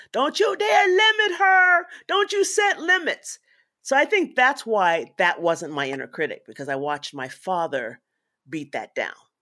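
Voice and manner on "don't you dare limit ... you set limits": mock very high, shrill, loud scream. Retelling how a father stormed to a house: imitating a father screaming.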